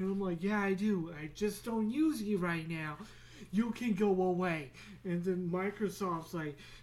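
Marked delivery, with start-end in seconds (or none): none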